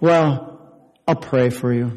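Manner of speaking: slow, halfhearted, resigned, going-through-the-motions inflection. Showing how people offer prayer as a last resort: resigned, halfhearted tone. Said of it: "with the almost the voice inflection".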